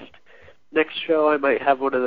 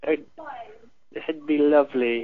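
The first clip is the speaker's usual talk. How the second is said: slow, drawn-out, put-on British accent. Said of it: "Did he go into a British accent now?".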